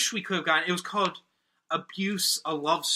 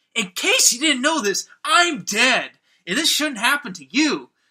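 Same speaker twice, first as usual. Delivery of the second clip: loud, high car-salesman sales patter voice; 5 semitones higher, 7 dB louder than usual. Retelling a line from a film scene, switching into a car salesman voice. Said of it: "into, like, this car salesman voice".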